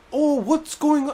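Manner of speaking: very high, attempted British accent. Retelling what the teacher said on coming back, attempted British accent. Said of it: "I'm trying to do a British accent".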